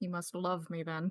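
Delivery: deadpan, dry, sarcastic delivery. Playing a character reacting to a god who strikes people with lightning: sarcastic. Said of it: "Navali says sarcastically".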